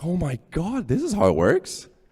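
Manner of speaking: high, amazed, excited gush. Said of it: "We were like".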